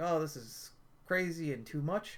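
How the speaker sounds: ordinary delivery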